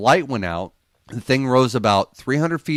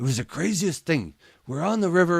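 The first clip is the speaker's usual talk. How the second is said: put-on German-accented voice, pitched up; 6 semitones higher, 4 dB quieter than usual. Retelling the uncle telling his fishing story; Uncle Hal's German accent. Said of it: "telling me in this German accent".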